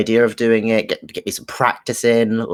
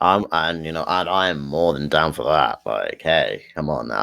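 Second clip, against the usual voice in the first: tired, worn-out, unexcited, unenthusiastic talk; 7 semitones lower, 4 dB quieter than usual. Podcast host near two a.m. offers to help, sounding tired and unenthusiastic. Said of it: "I don't sound very enthusiastic".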